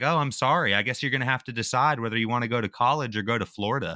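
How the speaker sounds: put-on snide, condescending tone, full of attitude. Imitating a middle-aged lady who offered only next week: mocking her attitude. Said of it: "with a freaking tone and everything".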